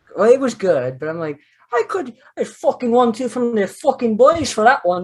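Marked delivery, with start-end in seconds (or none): 1.7-5.0 high, fake Irish accent. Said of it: "he does that fake one".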